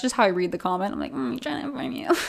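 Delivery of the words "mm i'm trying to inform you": put-on sassy mocking tone, higher pitch. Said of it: "I don't mean to be so sassy".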